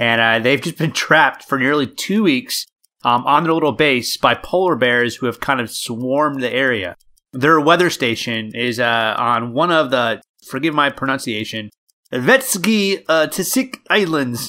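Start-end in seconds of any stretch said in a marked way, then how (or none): 12.1-14.5 put-on Russian accent. Telling a listener a news story, saying it in a russian accent. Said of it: "That's my Russian accent".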